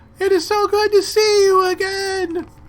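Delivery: huge booming voice, pitched high, very loud. Game master voicing Lulu speaking telepathically to the player, booming Lulu voice. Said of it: "a booming voice".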